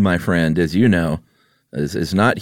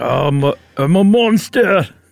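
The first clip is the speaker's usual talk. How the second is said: put-on Scottish accent, much higher; 10 semitones higher than usual. One player acts out a monster for the other to guess: Groundskeeper Willie voice. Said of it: "that was a groundskeeper Willie".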